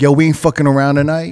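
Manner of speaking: ordinary delivery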